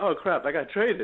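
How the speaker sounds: ordinary talk, nothing marked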